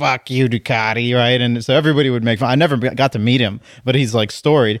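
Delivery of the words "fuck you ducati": rough, gravelly, nasty rasping voice. Retelling how a storied ducati seller talked: imitating a gravelly, nasty voice. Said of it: "this gravelly, nasty voice".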